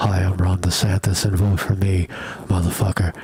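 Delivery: very close to the mic. Demonstrating a way of recording that his voice does not have, speak right on top of the mic. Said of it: "right on top of the mic like this".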